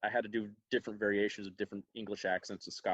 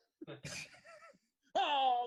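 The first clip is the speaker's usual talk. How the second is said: very high, panicked, squealing voice. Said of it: "Larry was Larry on the phone, like".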